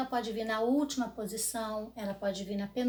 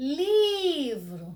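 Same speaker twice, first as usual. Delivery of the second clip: first syllable li of livro stressed and stretched long; 3 semitones higher, 6 dB louder than usual. Showing a trick to find the stressed syllable, drawn-out stressed li in livro. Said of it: "a sílaba que eu demorei mais é a sílaba tônica. No caso aí é o li".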